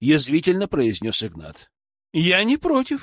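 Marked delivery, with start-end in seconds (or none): 2.1-3.0 very high-pitched, patronizing, condescending tone. The woman answers Ignat's remark, agreeing, condescending. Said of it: "снисходительно согласилась женщина".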